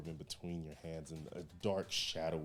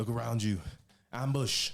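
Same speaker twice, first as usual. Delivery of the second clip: panicked, high, very loud alarmed scream; 6 semitones higher, 10 dB louder than usual. Game master voicing knocked-down enemies getting back up, screaming an ambush warning. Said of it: "they start screaming".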